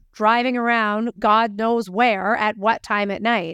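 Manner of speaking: usual speaking voice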